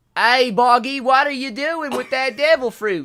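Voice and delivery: put-on loud, high, drawn-out hillbilly accent. Imitating how a character sounded, hillbilly-accent Shanks impression. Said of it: "He sounded like that. That's like the best imitation I can do".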